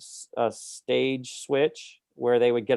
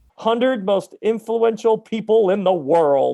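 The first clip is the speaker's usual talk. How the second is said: slow, high-pitched laughter through the words. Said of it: "You can't say that without laughing".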